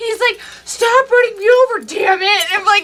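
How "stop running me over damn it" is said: irritated, angry, fed-up outburst. Retelling how a gaming partner reacted to being run over: imitating someone angry. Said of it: "he'd always get pissed off".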